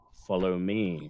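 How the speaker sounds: deep, low, level, inflectionless flat monotone. Narrating a character who nods and leads the listeners off, in a monotone voice. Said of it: "in a monotone voice says".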